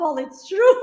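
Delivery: high, amazed exclamation. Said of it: "They're like".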